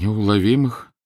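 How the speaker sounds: crestfallen, dejected, deflated, sinking voice. A man repeats a word he has just heard, in a sinking voice. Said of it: "повторил он упавшим голосом".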